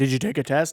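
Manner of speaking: light, teasing, jokey tone. Retelling how they asked her about a test: imitating own joking question. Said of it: "I said it that day completely joking".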